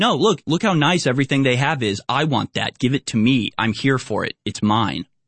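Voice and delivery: normal talking voice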